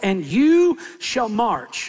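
slow, emphatic, wide pitch range, "you" stressed.

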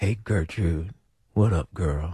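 silky, smooth, low, quiet late-night radio voice. Asked how to greet Gertrude the quiet storm way: smooth quiet storm voice. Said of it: "how do you say that in the quiet storm?".

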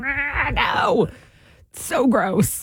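put-on voice like a fussy child. Speaker describing little kids refusing to try food, imitating a child refusing food. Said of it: "a very good impersonation of a child not wanting food".

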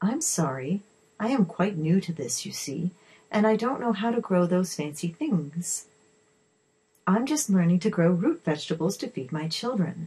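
ordinary talk

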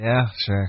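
flat and reluctant. Agreeing to go into business on a drink idea: unenthusiastic. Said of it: "You sound really excited".

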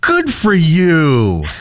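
acted, high, condescendingly impressed, overdone patronizing tone. Speaker retells a man's reaction on hearing his age, mock overly impressed. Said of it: "He said it like I was a 90-year-old who just ran a marathon".

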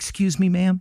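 acted, extremely timid, high little voice. Retelling calling out from a car window to a woman, retelling in a timid voice. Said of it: "in the most timid voice you could muster".

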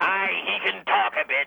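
put-on pirate captain voice. Calling in to the show as Captain Dildo: put-on pirate captain voice. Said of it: "this be Captain Dildo".

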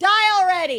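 high yelled taunt. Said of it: "we would always yell back".

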